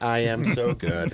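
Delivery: deliberate, very slow machine-like robotic voice. Doing the robot from Rick and Morty praising itself: Rick and Morty robot voice. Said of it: "it's the robot from Rick and Morty".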